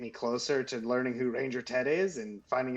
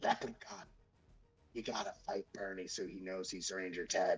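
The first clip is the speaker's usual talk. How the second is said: low, hushed half-whisper under the breath; 5 semitones lower, 8 dB quieter than usual. Player in a tabletop game half-whispering to a leprechaun as it flies away: half-whispering. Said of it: "I'm gonna whisper".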